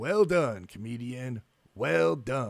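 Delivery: slow, sinister villain voice savoring every word. Speaker recounts the villain catching the hacker, in an evil James Bond villain voice. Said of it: "in his most evil James Bond villain voice".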